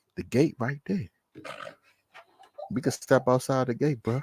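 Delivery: soft, hushed whisper under the breath. Retelling what he whispered to a man who threatened him, retelling a whisper. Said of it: "You know what I whispered to him?".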